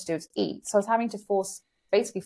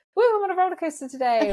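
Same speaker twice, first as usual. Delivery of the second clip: very high, woozy, playful fake dizzy whoop; 10 semitones higher, 4 dB louder than usual. Retelling joking on walks with her husband: imitating mock dizziness. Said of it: "pretend I'm dizzy".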